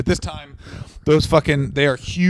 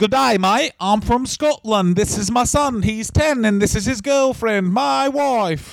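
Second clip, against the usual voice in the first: bad put-on Australian accent drifting Scottish, higher; 8 semitones higher than usual. Impersonating a wrestler for the other speaker: bad Australian accent turning Scottish. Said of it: "You switched to Scottish from a bad Australian".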